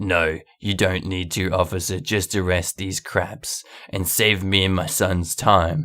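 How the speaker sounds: deep, dropped, entitled tone. Retelling a story, the speaker quotes Karen answering the cop, in a much lower voice. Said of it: "with a much lower voice".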